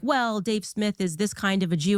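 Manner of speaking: ordinary talk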